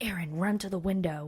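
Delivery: quiet whisper. Retelling a whisper someone heard through headphones, quiet whisper. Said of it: "in like a quiet voice".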